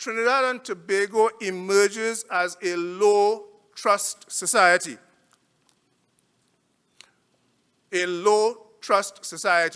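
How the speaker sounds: slow, deliberate, weighted, every word stressed. Presenting survey findings on trinidad and tobago, the speaker says it slow and emphatic. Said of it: "I'm going to say this slowly and emphasize".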